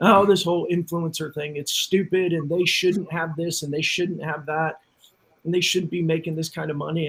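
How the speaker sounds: plain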